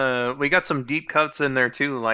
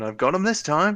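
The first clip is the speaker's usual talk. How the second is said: high, lifted cartoon pirate-villain voice; 5 semitones higher than usual. Quoting an old VHS preview line: Captain Hook voice from VHS preview. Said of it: "Captain Hook going".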